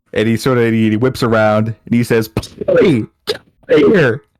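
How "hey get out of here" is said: swooping, shrill, very high-pitched scream. Playing a character who whips around and yells: screaming. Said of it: "Because I'm screaming".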